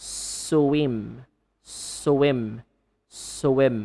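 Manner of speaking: swim, slow, low, careful, each sound drawn out. Demonstrating the correct S-W cluster for learners, slow careful enunciation. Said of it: "enunciate the cluster by using sui slowly".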